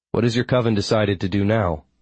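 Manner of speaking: ordinary delivery, nothing marked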